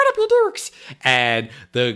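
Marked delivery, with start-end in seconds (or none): 0.0-0.7 squeaky, tiny, very high little-guy voice. Retelling a scene, voicing the little guy challenging a biker in his little voice. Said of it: "he says in his little voice".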